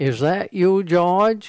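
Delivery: hollered, loud and high.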